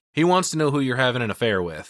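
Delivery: ordinary talk, nothing marked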